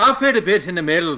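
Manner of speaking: put-on, attempted Irish accent. Asked for his best Irish accent, trying the line again: Irish accent. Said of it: "Please give me your best Irish accent".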